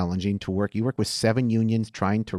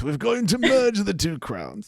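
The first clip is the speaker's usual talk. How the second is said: very high, swooping, put-on old-fashioned posh British accent; 11 semitones higher than usual. Speaker returns to a running bit, old British voice. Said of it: "we're going the old British voice".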